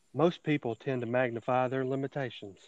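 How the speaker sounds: soft-spoken, gentle preacher voice. Giving Today's Word Devotional aloud to an expectant listener, best Osteen impression. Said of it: "I'm going to give my best Osteen impression".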